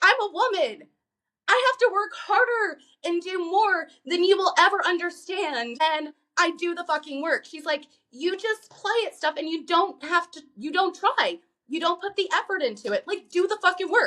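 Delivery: high, heated, harsh tone. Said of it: "She chews him out".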